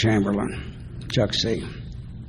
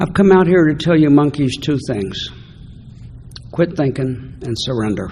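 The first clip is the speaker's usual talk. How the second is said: normal talking voice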